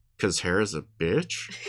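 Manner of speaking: muttered under breath. A game narrator voices a character's aside during a conversation, muttered under breath. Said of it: "Militia mutters under her breath".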